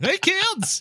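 squeaky, very high, goofy clown voice. Imagining a Talk Like a Clown Day, demo what it would sound like: goofy high-pitched clown voice. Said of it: "It's like a higher pitch goofy".

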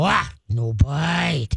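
deepened voice, words slowed right down and drawn out. Showing how to tell a biting dog off: deepened, slowed-down voice. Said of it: "you're gonna deepen your voice, slow it down".

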